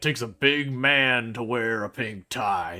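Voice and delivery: put-on gravelly, whiskey-roughened old cowboy voice. Retelling what an old cowboy said at the window: gravelly whiskey-soaked voice. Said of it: "in the most gravel whiskey soaked voice".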